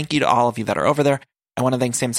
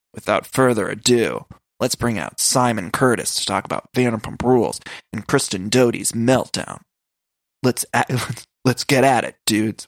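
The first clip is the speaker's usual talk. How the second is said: rough, gruff show-host style voice. Introducing a guest while trying to sound like TJ Lavin: imitating TJ Lavin's gruff voice. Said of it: "I'm gonna try to do like T J".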